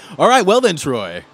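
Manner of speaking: high, loud, booming announcer voice. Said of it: "In the announcer voice".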